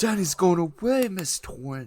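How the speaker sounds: very high attempted put-on Scottish brogue. Quoting a line from the movie, attempting a Scottish brogue. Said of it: "You got to do like a Scottish brogue".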